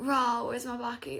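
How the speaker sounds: high, put-on posh London accent. Retelling a trip to a posh boarding school: imitating posh boarding school people. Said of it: "they were so posh".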